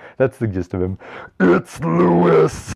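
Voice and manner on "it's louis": very high-pitched, raspy, rough put-on voice. Claiming they can do his voice, the speaker does a Louis voice. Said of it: "I can do his voice. ... that's pretty much what he sounds like".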